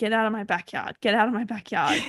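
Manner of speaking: plain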